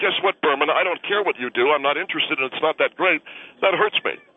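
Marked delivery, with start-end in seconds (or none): none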